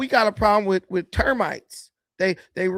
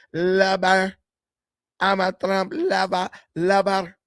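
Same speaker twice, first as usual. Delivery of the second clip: put-on Mexican accent, v as b, much slower. Rephrasing a line for a listener, in a put-on mexican accent. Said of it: "I would change the V to a B like Mexican".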